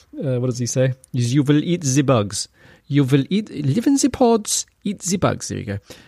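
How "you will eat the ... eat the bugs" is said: put-on German-accented voice, pitched higher. Mocking a globalist leader by imitating his voice: Klaus voice. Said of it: "I should be doing it in Klaus, Klaus's voice".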